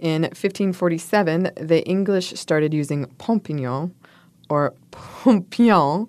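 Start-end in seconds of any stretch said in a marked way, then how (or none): 4.9-6.1 French accent with words stretched out slowly. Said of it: "I'm saying this with a French accent".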